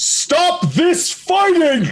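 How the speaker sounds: high, slow, drawn-out shout at full volume. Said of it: "Dole is going to mentally shout at the top of his lungs".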